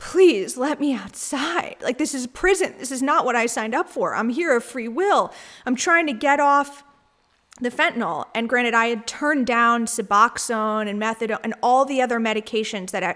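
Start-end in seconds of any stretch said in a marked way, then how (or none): 0.1-8.3 mock earnest, begging, pleading voice. Retelling begging staff to be let outside: retelling own begging. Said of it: "I was begging and pleading".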